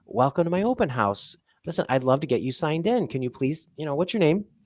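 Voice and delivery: sweet, really friendly, welcoming tone. Demonstrating asking someone's name at an open house, in a really nice way. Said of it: "if I say it in a really nice way".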